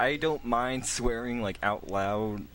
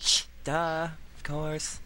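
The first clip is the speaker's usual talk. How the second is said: slow put-on valley girl voice; 6 semitones higher than usual. Showing another speaker how to talk like a valley girl stereotype: put-on valley girl voice. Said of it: "You gotta be all like".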